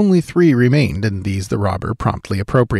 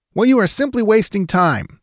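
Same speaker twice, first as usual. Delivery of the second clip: quick retorting tone at much higher pitch; 11 semitones higher than usual. A clerk answers a gunman at the safe, shooting back a reply. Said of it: "the clerk shot back".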